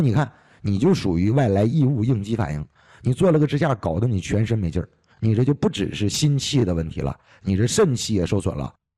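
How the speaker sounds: ordinary talk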